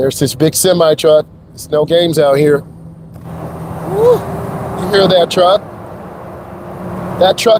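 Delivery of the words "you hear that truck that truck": raised voice speaking up over loud noise. Driving beside a semi truck and speaking over it, raised voice. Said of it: "sorry, I had to raise my voice".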